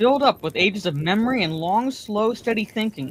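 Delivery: plain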